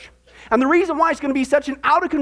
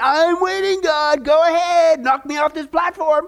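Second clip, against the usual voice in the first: mock defiant, goading, taunting tone; 3 semitones higher than usual. Retelling a professor yelling at the ceiling again: imitating someone yelling. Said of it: "yells at the ceiling again".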